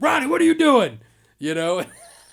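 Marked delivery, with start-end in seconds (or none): 0.0-1.0 shrill, very high, full-blast loud yell. Retelling how Tony yelled at Ronnie during a haunt, retelling a yell. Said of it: "He starts yelling at him".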